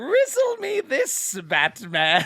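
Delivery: very high, swooping, stretched-out character voice. Acting out a new villain called the Rizzler taunting Batman: the Rizzler character voice. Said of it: "he comes in and he's like".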